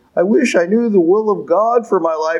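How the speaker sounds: mocking, mimicking voice. Speaker quoting what people always say, in a mocking voice. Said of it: "and I use my mocking voice".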